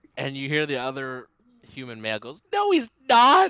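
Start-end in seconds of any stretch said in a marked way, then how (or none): 2.5-3.5 very high, very loud, trembling, protesting voice. Voicing a human man who protests: shaky voice. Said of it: "He has, like, a little shake in his voice".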